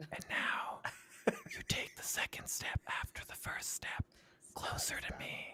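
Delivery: coaxing, soothing, sweet whisper. Retelling a man soothing someone over the phone: imitating someone whispering. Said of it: "he was whispering to her over the phone".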